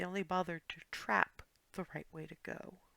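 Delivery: murmured whisper. In a tabletop game, a character whispers so only a companion can hear, whispering. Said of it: "she's whispering this only so that only Clarity can hear".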